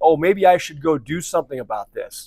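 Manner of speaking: usual speaking voice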